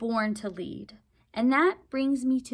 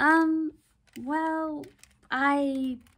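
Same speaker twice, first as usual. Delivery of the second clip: halting, unsure, stop-and-start faltering delivery; 4 semitones higher than usual. Salomar is questioned and hesitates before answering, hesitant. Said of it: "Salomar hesitated".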